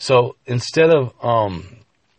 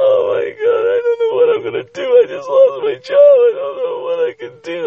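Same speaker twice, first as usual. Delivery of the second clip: very high, loud wailing and bawling through tears; 5 dB louder than usual. Acting out a woman in a story who starts to cry: mock crying. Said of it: "She starts bawling her out".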